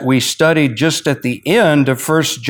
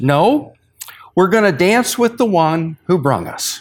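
very, very calm, composed, unruffled voice; 4 semitones higher than usual. Retelling Darrell's answer to a commentator who asked about changing strategy, imitating someone's very calm voice. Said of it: "in a very, very calm voice".

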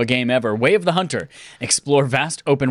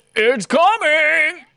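very high, straining cartoon-dad voice. Speaker recaps a games showcase disclaimer, doing a terrible Randy Marsh impression. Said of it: "That was a terrible Randy Marsh impression".

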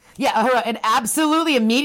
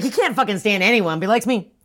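normal talking voice

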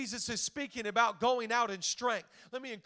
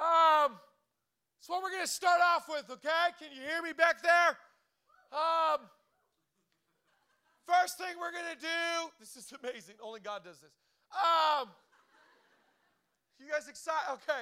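nervous, pitched-up, fumbling ramble; 6 semitones higher, 3 dB louder than usual. Acting out God giving a first pep rally: put-on nervous God. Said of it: "Sorry, I'm nervous".

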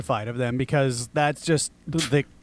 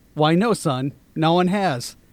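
ordinary talk

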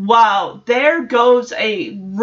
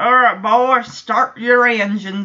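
put-on Western sheriff accent. Recapping a scene with Michelle and the kids, Joey's Western sheriff voice. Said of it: "So Joey's still in the Western Sheriff".

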